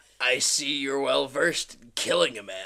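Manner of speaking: put-on pirate captain accent, laid on thick. Reading script dialogue aloud with a friend, in a pirate accent. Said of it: "give him a pirate accent".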